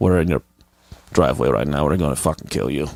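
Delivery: heavy, thick put-on Russian accent. Imitating a subscriber as a russian mafia member: imitating a thick russian accent. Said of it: "I hope it's a really thick Russian accent".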